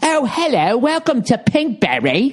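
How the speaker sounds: put-on posh upper-class English accent, slow, swooping. Speaker mocks the company's outgoing phone message in a Pinkberry English-accent greeting. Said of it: "Because it's got an English accent?".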